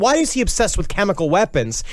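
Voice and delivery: ordinary talk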